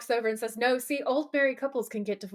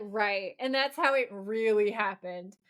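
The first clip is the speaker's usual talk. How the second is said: ordinary delivery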